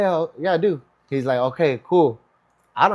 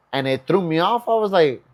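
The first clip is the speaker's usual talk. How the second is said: usual speaking voice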